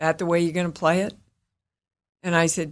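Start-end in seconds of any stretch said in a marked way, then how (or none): 0.0-1.1 calm, low-key, understated, even tone. Retelling what a co-star said after a rehearsal: imitating Tommy Lee speaking very quietly. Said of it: "he very quietly looked at me and went".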